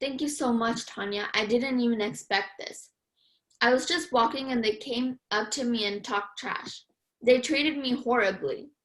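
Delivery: ordinary delivery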